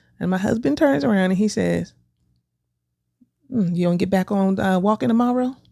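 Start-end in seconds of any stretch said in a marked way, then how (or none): 3.5-5.5 mocking, snide put-on voice. Retelling the husband's question about walking: imitating husband's snide remark. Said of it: "I didn't say it like that".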